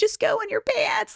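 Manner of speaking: very high, tearful, crying desperation. Retelling what she said while struggling to get a girl to the bathroom, crying. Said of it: "just crying".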